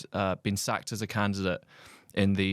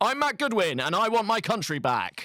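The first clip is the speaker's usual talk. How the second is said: big booming voice, very high; 12 semitones higher, 4 dB louder than usual. Retelling what a man said at a Fringe event, in a booming Matthew Goodwin voice. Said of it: "in like the booming voice".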